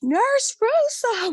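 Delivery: very high, delighted, excited, high-pitched shriek. A man recognizes the speaker in a clinic lobby decades later, retelling a screamed name. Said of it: "He's like screaming my name in the lobby".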